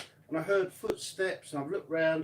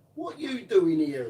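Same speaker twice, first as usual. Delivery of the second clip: exaggerated, put-on old lady voice and accent; 4 dB louder than usual. Retelling what an old lady at a church said: imitating an old lady's accent. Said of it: "she turned around and says".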